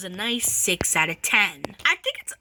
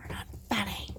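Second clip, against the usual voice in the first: hushed, very quiet near-whisper under the breath; 3 semitones lower, 13 dB quieter than usual. Repeating during a movie review that food jokes are not funny: said quietly. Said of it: "Why'd you say it so quietly".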